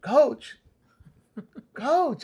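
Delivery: very high, shrill calling yell. Student teacher retells calling the coach out during a fight; retelling yelling for the coach. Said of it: "I'm yelling at him".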